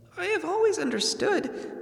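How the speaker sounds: scared squeaky voice. Narrator reads a character's reply to a boasting dragon, frightened squeak. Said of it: "said Bilbo in a frightened squeak".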